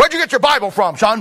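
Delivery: gruff voice. Retelling how a church member questioned a kid: imitating a gruff voice. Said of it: "he had a real gruff voice".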